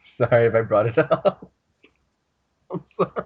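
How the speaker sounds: words broken by giggling laughter. Apologizing to the others for bringing something up, laughing while talking. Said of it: "I can't stop laughing".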